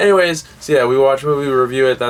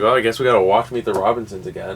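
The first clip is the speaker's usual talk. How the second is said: usual speaking voice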